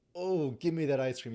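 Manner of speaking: clutching, insistent, tight, grasping craving. Contrasting desire with attachment over ice cream, tight grasping tone. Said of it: "in my tone of voice, there's a like a tightening around it".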